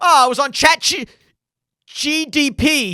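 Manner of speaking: panicky, high, drawn-out, flat-footed panic. Retelling how a dad says the name after being corrected: imitating a panicked dad. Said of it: "he just, like, panics every time".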